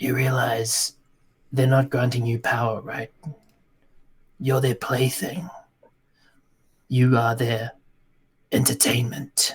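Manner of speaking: speaking in a whisper. Reaching into another character's mind to speak to him: whispering. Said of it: "just whisper to him".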